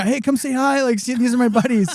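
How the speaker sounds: annoying, eager, high voice. Retelling introducing his buddies like a fanboy: imitating an annoying guy. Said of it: "I'm like the annoying guy".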